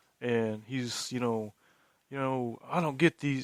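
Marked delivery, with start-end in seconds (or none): 2.7-3.4 Missouri way of talking. Imitating a buddy from Missouri: imitating Hewitt's voice. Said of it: "he just talks like this".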